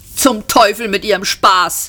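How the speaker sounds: irritated, cross, scolding grumbling complaint. Arthur answers Ford before running out of the pub, scolding. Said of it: "schimpfte er".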